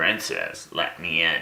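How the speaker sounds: croaky, croaking voice like a frog. Narrator reads a frog at the door calling to the princess, croaky frog voice. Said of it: "called a croaky voice".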